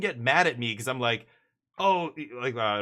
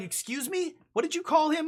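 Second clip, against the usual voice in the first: acted, offended, indignant, very high-pitched voice. Speaker retells a woman's reaction to what he called a dog, imitating an angry woman. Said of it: "And she got pissed".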